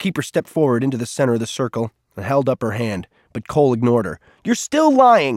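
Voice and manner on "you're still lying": very high, ringing, yelled outburst. Cole ignores the keeper and accuses the other person: shouting. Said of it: "he shouted".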